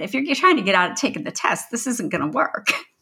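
sarcastic, challenging tone. Speaker retells what they said to a test-taker lying on the floor: retelling a sarcastic remark. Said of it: "My sarcastic".

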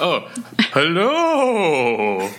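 high, swooping, ghostly voice, hello drawn out. A host greets a returning guest on the show with a spooky hello. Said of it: "Are you going to do a spooky hello?".

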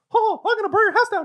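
very high-pitched, frantic voice. Speaker riffs on favorite goofy impressions, crazy maniac Mickey Mouse voice. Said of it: "The crazy maniac Mickey Mouse".

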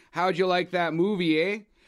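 put-on Canadian accent. Podcast host opening a movie discussion: canadian accent. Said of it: "Don't tell me you're going to fucking do that accent the whole movie".

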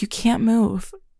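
softly spoken. Speaker retells what she said after putting the speaker's arm down, in a soft voice. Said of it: "like in this soft voice".

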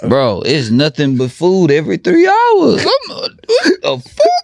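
mock wailing, complaining tone.

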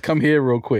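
put-on male yelling. Describing a man in the shower calling a woman in: imitating a man yelling. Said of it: "he yells".

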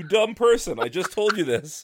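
booming comic-book hero voice. Reacting to a comic where Lois asks what if someone sees him, Superman voice. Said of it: "in a Superman voice".

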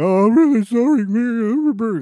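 very slow, drawn-out, weepy blubbering in man's voice. Retelling a man's apology after being confronted, imitating someone crying. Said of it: "Crying in the corner".

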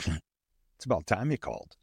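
cool-voiced, coolly sarcastic delivery. Retelling her first words on the phone after twenty-one years: imitating cool-voiced sarcasm. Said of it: "cool-voiced sarcasm".

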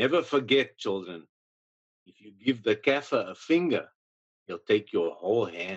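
put-on Afrikaans-accented speech. Saying it the way he would say it, for dramatic purposes, in a heavy Afrikaans accent. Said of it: "in a heavy Afrikaans accent".

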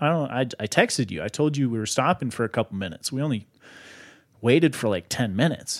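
ordinary talk, nothing marked

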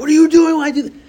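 shrill, very high, loud screaming outburst. Recounting a door crushing a finger and screaming at their son, retelling a scream. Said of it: "I screamed at my son".

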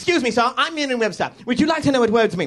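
spunky, high tween voice. Acting out a spunky Victorian tween greeting strangers: Merriam-Webster as spunky Victorian tween. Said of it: "an industrious tween walking around Victorian England".

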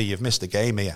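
ordinary talk

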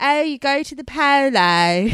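posh drawl, stretched polo. Describing talk at work about a polo market, the speaker quotes themself in a put-on posh accent. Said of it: "I've been doing this accent all week".

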